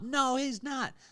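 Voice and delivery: mock, very high shouted yelling. Recounting arguing with a coach at a kids' flag football game, retelling a yell. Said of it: "I'm trying to yell over the top".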